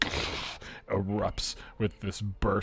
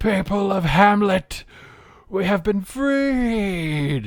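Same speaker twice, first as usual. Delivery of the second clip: high, very loud, booming, drawn-out delivery; 12 semitones higher, 11 dB louder than usual. Narrating a scene where a dwarf calls out to the people: booming loud dwarf voice. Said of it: "booming in this loud voice".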